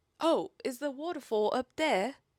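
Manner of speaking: put-on British accent. Retelling what a man on a hike asked her, in a British accent. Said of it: "in a British accent".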